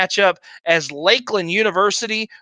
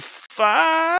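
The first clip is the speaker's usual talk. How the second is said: high, cracking, breaking voice, five drawn out; 9 semitones higher than usual. An announcer calls the final result and record after a game, voice cracking. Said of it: "my voice cracked".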